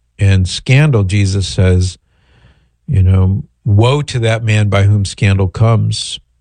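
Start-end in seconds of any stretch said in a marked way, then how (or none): none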